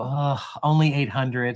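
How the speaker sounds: mock dejected, deflated, put-on tone. Speaker acts out a loan officer's answer about her Facebook friends, imitating a dejected reply. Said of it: "her face will get super dejected and go".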